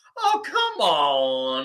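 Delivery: put-on swooping Southern accent, with "on" drawn out. Imitating how a podcaster introduces a story: Jim Cornette's Southern accent. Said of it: "he's got that, that Southern accent".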